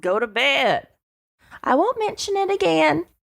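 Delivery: put-on Texan accent, lady voice. Retelling what someone said to Alan, in a Texan church lady accent. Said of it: "you're really good at like a Texan church lady murderer accent".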